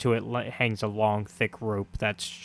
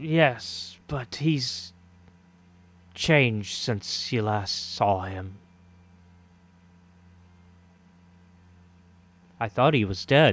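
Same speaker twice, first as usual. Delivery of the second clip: hoarse character voice, lower pitch; 2 semitones lower than usual. The narrator voices Donovic answering Ismark's question, hoarse Donovic voice. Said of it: "Donovic's voice has been kind of hoarse".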